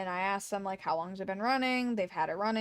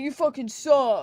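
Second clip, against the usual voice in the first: full-volume, shrill, furious, angry yell; 5 semitones higher, 8 dB louder than usual. Retelling how customers yelled at the register worker on their way out, retelling someone yelling. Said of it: "yelled at her".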